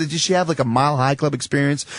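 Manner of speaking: ordinary talk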